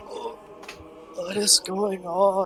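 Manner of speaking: barely-there, hushed, very quiet, high little voice. In a role-play scene, voicing a newly heard character in a very quiet voice. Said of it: "this very quiet voice saying".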